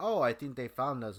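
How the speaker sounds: ordinary delivery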